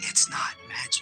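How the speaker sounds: hushed, very quiet whisper under the breath. At the game table, a player answers the others' shouts to stop the magic, very quietly. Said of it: "I'm just gonna say very quietly".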